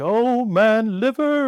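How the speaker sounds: very showy, theatrical, flamboyant, high-pitched voice. Retelling a practitioner palpating a patient: very flamboyant Eric imitation. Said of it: "very, very flamboyant".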